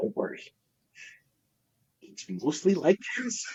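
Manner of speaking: very high-pitched, hushed, reassuring whisper. Retelling what a salesman said quietly during a visit: imitating a whisper. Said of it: "he whispers to me".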